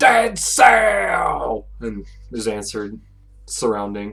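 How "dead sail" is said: shrill, high, loud shout, sail stretched long. Voicing a sailor raising a toast to the crew, shouting. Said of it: "And then shouts".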